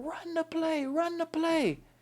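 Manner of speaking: very high, slow, drawn-out yelling. Retelling a coach's orders during a game: imitating coach yelling. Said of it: "And he's yelling".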